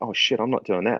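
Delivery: hushed half-whisper, partly voiced, quiet. Retelling what people nearby said before a freezing swim, half-whispering. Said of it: "like whispering".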